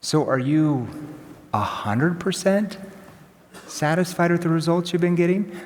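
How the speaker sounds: doubtful, worried, concerned, skeptical probing tone. Showing how to ask a client about past results: concerned, skeptical tone. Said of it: "Kinda concerned slash kinda skeptical".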